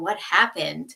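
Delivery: ordinary delivery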